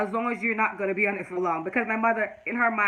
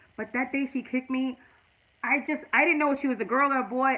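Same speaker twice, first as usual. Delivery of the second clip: all emotional, overcome, welling up; 4 semitones higher than usual. Telling listeners about a hard decision to keep her baby, emotional. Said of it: "I'm sorry guys, I'm all emotional".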